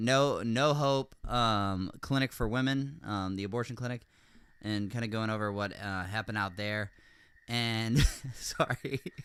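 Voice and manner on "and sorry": slow, giggly, cracking-up delivery. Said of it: "I'm cracking up".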